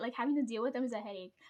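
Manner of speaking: fast, rushed, all in one breath. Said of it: "I got that out in one breath".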